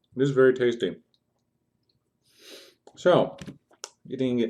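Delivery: talking with mouth full. Streamer eating pie during a Tabletop Simulator game, talking with mouth full. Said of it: "I have a mouthful of pie right now".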